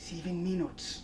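whispered under the breath. After checking his watch, a man whispers to himself. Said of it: "he whispered".

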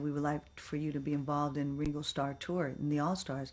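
plain

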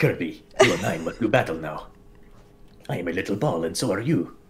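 put-on spoken with a Spanish accent. Retelling how Meta Knight talks in the cartoon: Meta Knight voice with Spanish accent. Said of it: "a Spanish accent or something?".

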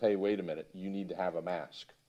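ordinary talk, nothing marked

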